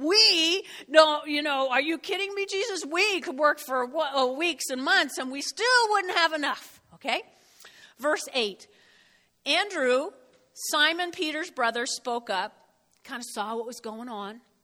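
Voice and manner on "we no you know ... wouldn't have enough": whining delivery. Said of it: "Philip protesting to Jesus".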